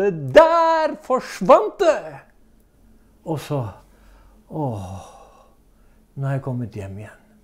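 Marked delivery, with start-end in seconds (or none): 0.1-2.2 ringing, high, swooping shout, der drawn out. Recounting a sudden moment, the speaker reenacts raising their arms: retelling a shout. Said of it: "strekte hendene i været og ropte".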